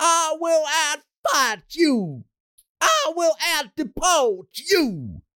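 high, slow, drawn-out mock scream.

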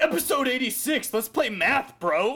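dim, dumb meathead jock voice. Repeating the title after being asked for a dumb jock voice. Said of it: "like a dumb jock".

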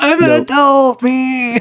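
very high, drawn-out, dragged-out whine. Discussing Runaways feedback, mimicking Chase: whiny Chase voice. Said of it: "now you're just like whiny Chase. Like".

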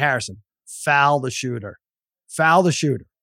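ordinary talk, nothing marked

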